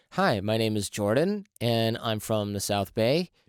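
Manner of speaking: rising uptalk on every phrase, statement rising like a question. Retelling classmates introducing themselves in a voice acting course, imitating uptalk. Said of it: "sounded like you were asking all of us".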